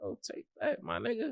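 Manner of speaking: breathy, tearful, urgent whisper. Retelling begging an older friend to take a deal: retelling a tearful plea. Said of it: "I got tears coming down my eyes".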